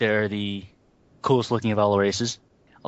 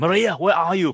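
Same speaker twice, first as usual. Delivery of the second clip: put-on deep-toned Austrian accent, raised pitch; 9 semitones higher, 4 dB louder than usual. Voicing a game character in a dark Austrian voice: imitating Arnold Schwarzenegger. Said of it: "Like a really dark Austrian".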